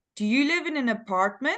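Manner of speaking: rising intonation at the end. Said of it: "The intonation for yes and no question goes up".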